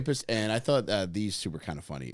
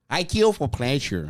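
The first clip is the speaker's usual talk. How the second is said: sultry, seductive put-on Brazilian accent, pitched up; 5 semitones higher, 7 dB louder than usual. Repeating the other speaker's line, say it in a sexy Brazilian accent. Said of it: "in your sexiest Brazilian accent".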